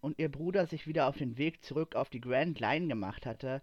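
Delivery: ordinary delivery, nothing marked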